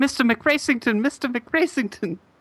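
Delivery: very high-pitched put-on British accent. Joking about a character name: British accent. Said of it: "It's like a British accent".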